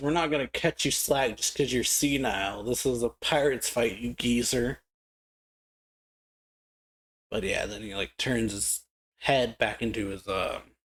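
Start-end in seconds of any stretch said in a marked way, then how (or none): none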